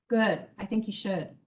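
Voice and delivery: low, soft, dry, sarcastic, indifferent tone. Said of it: "I love that sarcasm in that judge's voice".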